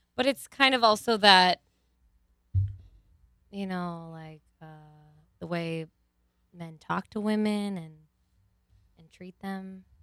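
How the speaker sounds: meek, very quiet voice. In a conversation, the speaker makes a point in a quieter voice. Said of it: "I'm saying this in a quieter voice".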